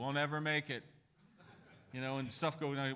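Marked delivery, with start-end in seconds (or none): 0.0-0.8 gloomy cartoon voice. Describing an old cartoon character who always despaired, doing Glum's voice. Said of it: "he had this sort of voice".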